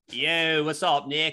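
heavy, strongly leaned-into Philadelphia accent.

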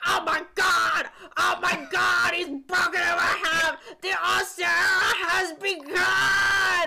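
high, loud, slow announcer call, "begun" stretched. Retelling a wrestling match as the announcer reacts, Jim Ross announcer impression. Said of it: "he's just sitting at the announcer table like".

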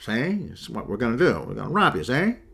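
swooping, small tough-guy cartoon gangster voice. Joking that someone sounds like a little cartoon gangster, with an Edgar G. Robinson gangster voice. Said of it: "sounds like the little gangster from Bugs Bunny".

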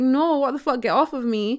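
plain

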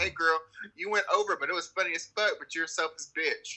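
normal talking voice

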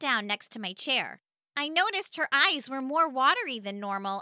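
ordinary delivery

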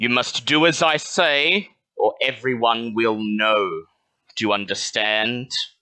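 mechanical, electronically distorted voice. Playing a blackmailer's voicemail message: mechanical distorted voice. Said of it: "A mechanical voice begins to speak through the phone receiver".

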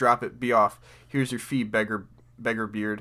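ordinary talk, nothing marked

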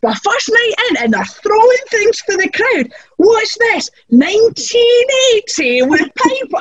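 mock fuming, seething, aggrieved indignant tone. Retelling being furious backstage on the first night: imitating own seething rant. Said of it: "And I'm seething, going".

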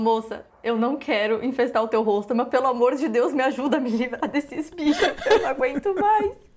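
pleading tone, on the verge of tears, almost crying. Retelling a plea to a lady for help with bug bites: retelling almost crying. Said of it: "Quase chorando, falando".

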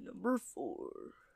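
whispered, breathy big man voice. Asked to try the big man voice, a speaker announces his pick, in a big man voice. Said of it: "why don't you try the big man voice?".

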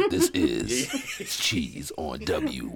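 drawn-out, very slow radio announcer broadcast voice. Announcing the show's name on W in a radio announcer voice. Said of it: "with the radio announcer".

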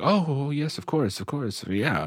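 feigned agreeable tone. Imitating a character faking that he understands: imitating someone pretending to know. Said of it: "the acting of, of pretending to know".

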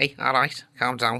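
Scouse voice from Liverpool. Asked what the accent is like, showing it: Liverpool Scouse accent. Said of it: "You can do it quite well".

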